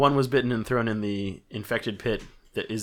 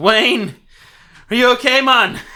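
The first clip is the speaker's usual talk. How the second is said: put-on mixed Scottish Jamaican accent; 14 semitones higher, 11 dB louder than usual. Voicing a guard who drags his friend from the infected: put-on scottish jamaican accent. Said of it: "Scottish Jamaican".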